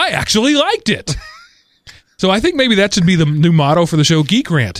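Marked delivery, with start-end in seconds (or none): 0.0-1.1 high, surprised exclamation. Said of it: "with surprise in his voice".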